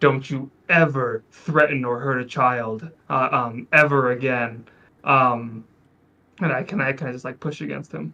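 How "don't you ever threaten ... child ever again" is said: slow, deliberate, menacing, threatening tone. Retelling grabbing a man by the coat, acting out a menacing threat. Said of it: "in the most menacing way possible".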